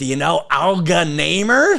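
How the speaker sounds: put-on very nerdy New York accent.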